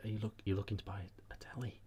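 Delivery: hushed whisper. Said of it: "why are we whispering?".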